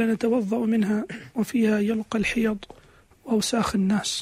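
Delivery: ordinary talk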